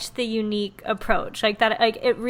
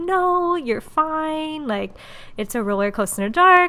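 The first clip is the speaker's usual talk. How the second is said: put-on, high, soothing, reassuring voice; 5 semitones higher than usual. Retelling what they were paid to tell riders: imitating reassuring Disney voice. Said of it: "have my Disney voice, be reassuring".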